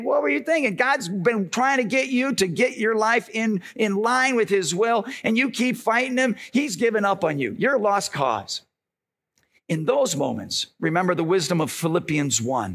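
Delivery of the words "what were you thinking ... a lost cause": ordinary talk, nothing marked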